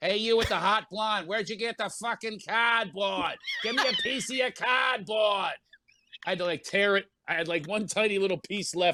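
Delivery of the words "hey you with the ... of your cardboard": swooping, put-on Boston accent. Speaker retells what a fan called out to him: put-on boston accent. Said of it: "with that Boston accent".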